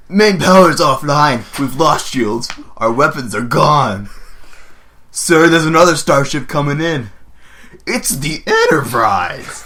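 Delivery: very loud, deliberate, slow, high, drawn-out booming delivery. Reading off his lines aloud, in an Adam Scott impression. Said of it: "In my best Adam Scott impression".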